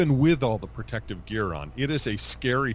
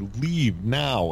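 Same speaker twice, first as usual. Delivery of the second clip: bossy, commanding, goon-like thug voice. Retelling walking out immediately, mock commanding goon voice. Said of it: "in a commanding goon-like voice".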